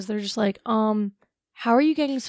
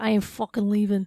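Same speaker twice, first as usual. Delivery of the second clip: put-on voice of a seventy-five-year-old Italian man. Imagining someone in the crowd who refuses to leave, doing an old Italian man voice. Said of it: "seventy-five year old Italian man".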